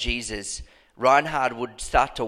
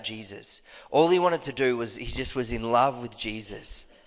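usual speaking voice

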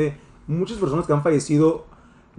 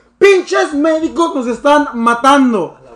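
very high-pitched, loud yell; 10 semitones higher, 8 dB louder than usual. Retelling how people at the hospital began shouting at the doctors, imitating a shout. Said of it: "Y comenzaron a gritar".

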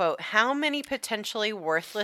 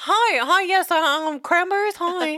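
put-on eager seller voice, higher and louder; 12 semitones higher, 7 dB louder than usual. Retelling how the robber guy first messaged a buyer: imitating Carlio. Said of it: "our robber guy, was like".

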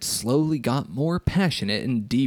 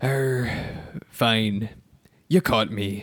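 put-on character voice, every word dragged out very slowly. Reading a story aloud, voicing Mister Krabs: Mister Krabs voice. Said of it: "I thought I had a good Mister Krabs".

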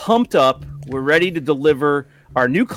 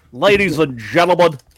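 radio-host announcing voice; 3 semitones higher, 4 dB louder than usual. Opening the show with a Rush Limbaugh voice. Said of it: "my ladies and gentlemen is Rush Limbaugh".

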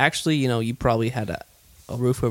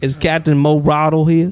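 fake Southern accent, louder; 3 semitones higher, 8 dB louder than usual. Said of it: "an instant Southern accent".

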